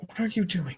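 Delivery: very quiet half-whisper. Asking in character what another character is doing: very quiet half-whisper. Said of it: "it's very quiet whisper".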